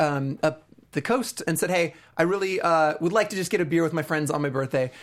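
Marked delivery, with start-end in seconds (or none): none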